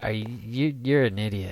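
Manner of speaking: ordinary delivery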